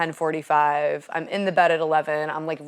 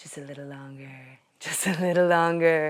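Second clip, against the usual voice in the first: hushed, sweet whisper. Describing the snooze button as a devil, speaker voices it, sweetly whispering. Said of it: "Sweetly whispering".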